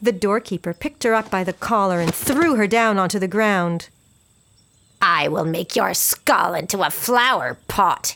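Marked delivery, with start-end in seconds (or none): 5.0-8.1 slow, deliberate, drawn-out hissed words. The doorkeeper throws a little girl to the ground, then speaks, hissing. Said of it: "he hissed".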